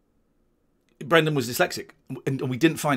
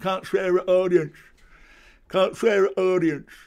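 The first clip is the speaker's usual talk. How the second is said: higher, slowed-down, scolding tone. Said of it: "he told me off for swearing at the audience".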